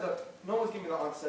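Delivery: ordinary talk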